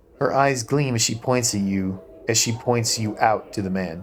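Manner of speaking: normal talking voice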